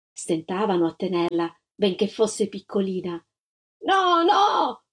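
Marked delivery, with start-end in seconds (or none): 3.8-4.7 shrieking, high screamed cry of refusal. A woman struggles against the officers holding her: screaming.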